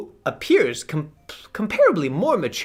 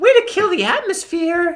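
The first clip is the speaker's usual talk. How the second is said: shrill, very high, loud put-on girl voice; 12 semitones higher, 5 dB louder than usual. Voicing a girl character in a scene, in a put-on girl voice. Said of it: "I only have one girl voice".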